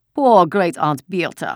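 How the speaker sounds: loud, patronizing, condescending tone. The officer, hand on the casket, speaks to a woman: condescending. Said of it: "he said in a condescending voice".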